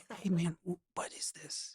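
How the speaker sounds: very quiet whisper under the breath. Retelling what a store clerk asked about the sign: imitating someone whispering. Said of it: "He's, like, whispering".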